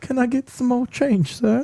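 put-on very high pitched pleading voice with British accent. Showing how to ask for spare change, in an Oliver Twist voice. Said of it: "Why are you British?".

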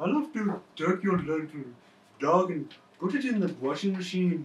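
put-on Filipino English accent throughout. Impersonating a guy from the Philippines: imitated Filipino accent. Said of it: "I can do a good impression of everyone from the Nut Show. ... a guy from the Philippines who's like".

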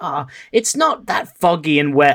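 ordinary talk

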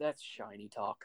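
low, very quiet, hushed grumble under the breath. Narrating a tabletop game, a character mutters, muttered under his breath. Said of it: "He just says under his breath".

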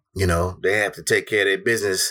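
plain

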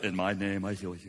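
soft, feeble, anemic-sounding delivery. Mocking a lame Jesus movie, imitating its healer: imitating anemic TV Jesus. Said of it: "anemic Jesus guy says".

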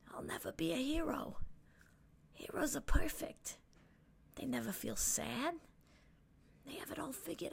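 hushed, quiet, breathy, whispered murmur. With the crowd in the background, [name] speaks quietly. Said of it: "[name] says quietly".

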